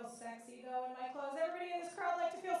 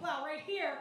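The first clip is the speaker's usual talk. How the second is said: ordinary delivery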